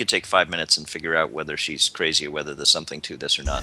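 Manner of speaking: hushed half-whispered aside. Half-whispering in character to the other party members: half-whispering. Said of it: "I whisper to these guys".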